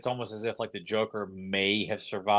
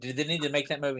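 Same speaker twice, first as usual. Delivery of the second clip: plain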